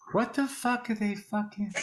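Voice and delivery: put-on hushed whisper-yell. Imitating a friend waiting for restaurant drinks: Paul's whisper yell. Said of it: "Paul whispers yell".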